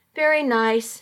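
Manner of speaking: usual speaking voice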